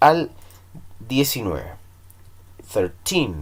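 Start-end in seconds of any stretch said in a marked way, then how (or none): 2.7-3.4 put-on thirteen with stress on the final syllable -teen. Spanish lesson on English numbers thirteen to nineteen: stress on last syllable teen. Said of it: "el acento siempre va al final".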